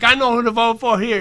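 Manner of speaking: ordinary talk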